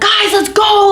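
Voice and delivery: very high-pitched, excited, shrieking scream. Speaker recounts running around to all the doors rounding people up, retelling a scream. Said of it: "like screaming like".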